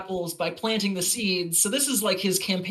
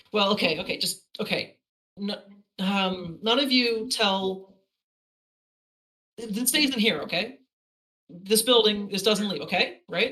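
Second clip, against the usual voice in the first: ordinary delivery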